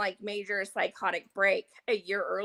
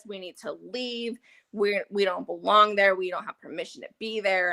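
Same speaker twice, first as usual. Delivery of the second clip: ordinary talk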